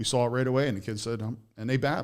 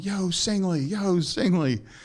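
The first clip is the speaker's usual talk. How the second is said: slow, high-pitched, drawn-out hollered yell; 8 semitones higher, 6 dB louder than usual. Recalling arriving early before a game and a man calling out: imitating Joe Grace Jr. yelling. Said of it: "this guy's like yelling".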